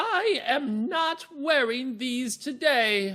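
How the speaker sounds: playful regal voice, very high, very slow drawl. Demonstrating how a queen character might sound: fun queenly voice. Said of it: "Sounds kind of like a fun queen voice".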